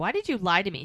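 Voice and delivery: put-on furious, demanding, loud angry voice. Retelling a man's argument with a woman at a Renaissance fair, retelling an angry question. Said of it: "And he's pissed".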